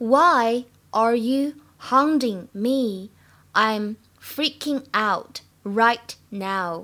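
very slow unvoiced whisper, word by word.

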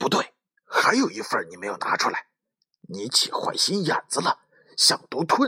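hushed, pressed-down, shrill high-pitched voice. Narrator reading one of two overheard voices, hushed high-pitched voice. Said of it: "一个被压低了的尖嗓子说".

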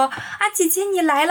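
cheery, high, put-on little-girl voice. Retelling a story where a man in girl's clothes greets someone; put-on little girl voice. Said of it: "还装出那种小女孩的声音说".

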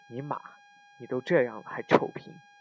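plain

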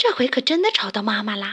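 ordinary delivery

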